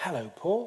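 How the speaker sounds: friendly, welcoming tone. Demonstrating a friendly greeting after a neutral one, in a friendly voice. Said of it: "Whereas a friendly one is".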